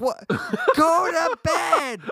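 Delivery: put-on shrill, very high, dragged-out swooping scream. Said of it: "screaming at him".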